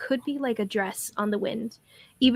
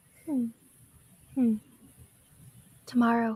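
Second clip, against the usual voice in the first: hushed, soft half-whispered murmur; 4 dB quieter than usual. Voicing a small flying creature who speaks to the others: half-whispering. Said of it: "she kinda whispers this to everyone else".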